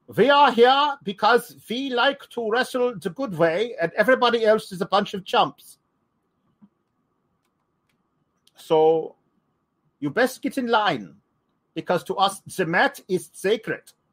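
put-on stock old-movie German villain accent. Retelling a wrestling faction's callout, in a generic old-movie German villain voice. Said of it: "generic German guy from an old World War II movie".

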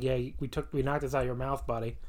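normal talking voice

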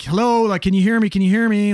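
calling out loudly. Recounting calling out to check someone could hear, retelling yelling out. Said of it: "I'm kind of yelling out to be like".

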